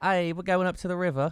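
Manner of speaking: failed Australian accent drifting British. Speaker trying an accent they say they can no longer do, bad Australian accent. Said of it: "That was British".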